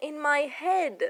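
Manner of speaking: ordinary delivery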